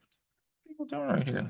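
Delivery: put-on high, soft, baffled, bewildered child voice. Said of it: "and I'm like".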